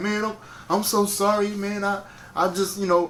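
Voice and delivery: high, flustered, sheepish male voice.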